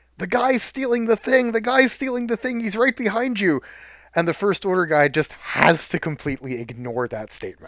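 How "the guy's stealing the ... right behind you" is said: put-on very high, shrill yell in a child's voice. Retelling a kid at a larp warning an actor: imitating a kid yelling. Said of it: "this one kid literally yelling".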